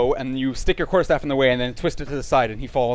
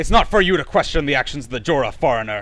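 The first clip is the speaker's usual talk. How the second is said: calling out, somewhat menacing, with hint of threat; 3 dB louder than usual. Game narrator voicing a character who calls out when questioned, somewhat menacing voice. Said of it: "he calls out in a somewhat menacing voice".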